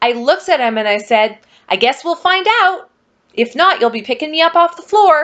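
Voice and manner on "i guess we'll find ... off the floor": mock fuming, angry, pitched up. Retelling a reply to a night nurse who asked if she could walk: retelling own angry retort. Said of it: "And I'm so mad".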